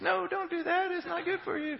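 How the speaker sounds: very high, effeminate angel voice. Acting out the little angel on a shoulder: effeminate Mike Tyson voice. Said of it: "the effeminate Mike Tyson voice".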